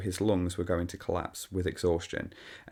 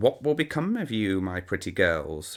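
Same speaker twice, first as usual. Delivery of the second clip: cruel, croaky witch voice. Narrator reading a witch's line to the girls, croaking witch voice. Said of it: "the witch croaked".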